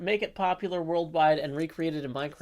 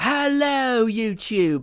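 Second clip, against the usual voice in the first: put-on British accent, higher and louder; 5 semitones higher, 7 dB louder than usual. Showing an old school Asuma impression to chat. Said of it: "Asuma classic".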